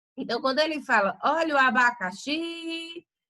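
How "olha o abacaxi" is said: abacaxi with extra force on xi. Like a market vendor selling fruit, calling out abacaxi: extra force on xi. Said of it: "o xi, ele teve mais tonicidade, ele teve mais força".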